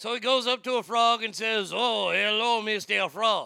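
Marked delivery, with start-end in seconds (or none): 1.7-3.5 slow, put-on French accent, scorpion voice. Telling the scorpion and frog fable, the scorpion greets the frog; French accent for the scorpion. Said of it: "I'm making the scorpion sound French".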